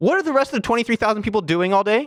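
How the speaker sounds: shrill, very high shouting. In a conversation with another speaker, the speaker is yelling. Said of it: "Sorry if I'm yelling".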